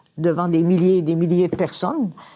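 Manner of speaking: ordinary talk, nothing marked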